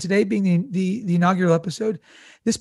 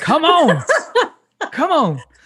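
loud, swooping, drawled Southern accent; 9 semitones higher, 6 dB louder than usual. Answering a co-host's greek word by saying it back in a southern accent. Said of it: "I'll just say it in good old Southern".

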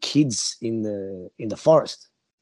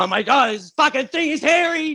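put-on very high yell, swelling louder word by word. Retelling a man fleeing something in the bush: imitating someone getting louder. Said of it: "he's getting louder and louder".

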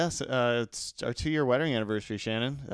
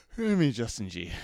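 tired, yawning while speaking. A podcast co-host introduces himself at the show's start, yawning. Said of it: "you're yawning already".

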